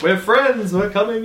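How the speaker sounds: winning, reassuring, charismatic, trustworthy voice, very high. Player yelling out just before their turn finishes, in a very charismatic, trustworthy voice. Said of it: "in my very charismatic, trustworthy voice".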